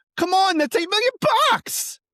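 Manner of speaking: shrill, very high, loud put-on yell. Doing an impression of how Dylan yells: yelling like Dylan. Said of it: "how to yell like Dylan".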